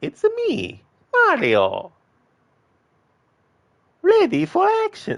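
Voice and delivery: very high, loud squeaky voice, drawn out slowly. Trying out a video game character's catchphrase, squeaky high Mario voice. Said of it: "doing like a squeaky, high pitched voice and a deep guttural voice".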